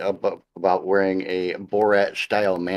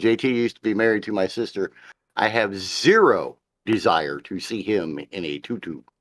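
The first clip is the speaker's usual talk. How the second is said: ordinary talk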